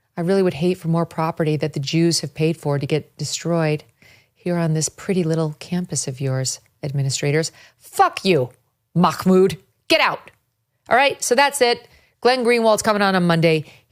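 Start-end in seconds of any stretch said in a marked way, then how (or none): 0.1-7.5 mocking, put-on soft menacing voice, lower pitch. Mocking an activist's on-camera manner in a soft voice: imitating Khalil's soft voice. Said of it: "I'll say it in my soft voice, the one that Khalil uses".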